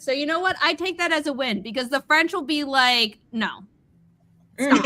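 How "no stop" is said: usual speaking voice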